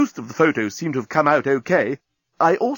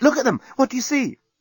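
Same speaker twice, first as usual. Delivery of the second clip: very high, bursting with barely contained excitement; 11 semitones higher than usual. Nettie, having thrust photographs into Rodden's hands, barely containing her excitement. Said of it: "hardly able to contain her excitement".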